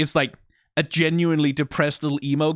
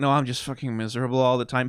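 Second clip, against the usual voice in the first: put-on gloomy character voice. Contrasting two characters' outlooks, voicing Vex in a mock-depressed voice. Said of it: "Vex is like a depressed emo".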